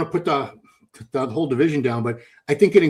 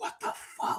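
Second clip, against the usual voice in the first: acted whisper, quieter. Retelling what people whispered about retired women bodybuilders: imitating people whispering.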